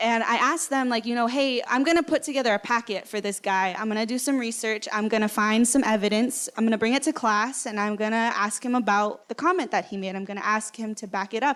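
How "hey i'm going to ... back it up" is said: normal talking voice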